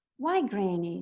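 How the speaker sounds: ordinary talk, nothing marked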